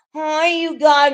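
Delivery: imitated girly accent. Mocking someone by imitating their pink girl accent. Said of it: "That pink girl accent ain't even gonna save you".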